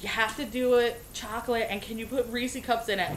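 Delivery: ordinary delivery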